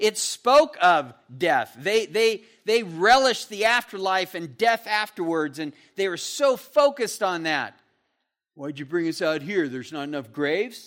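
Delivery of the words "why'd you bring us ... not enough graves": low, mocking, sarcastic complaining tone. Retelling the complaint about not enough graves: imitating sarcasm. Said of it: "You can see the sarcasm involved with that".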